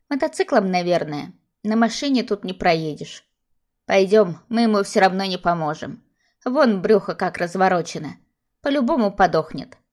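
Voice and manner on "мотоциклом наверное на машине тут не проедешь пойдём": usual speaking voice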